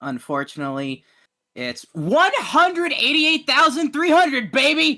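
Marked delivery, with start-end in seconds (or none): 1.5-5.0 sudden excitement. Announcing a tender weight right after saying unfortunately: sudden excitement. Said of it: "the sudden excitement in my voice".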